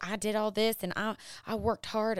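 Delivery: strong, full-on put-on southern US accent. Recalling a past self taking credit for everything, voicing it in a Southern accent. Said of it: "I just got really Southern right there".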